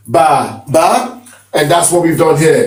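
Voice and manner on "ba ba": "ba ba" with low first ba, high second. Explaining tone marks, say ba ba, low then high tone. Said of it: "which means low tone, then high".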